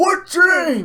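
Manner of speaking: very high hollering, yelling. Retelling how a woman yelled a question into her phone; imitating someone yelling. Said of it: "Like she's yelling so fucking loud".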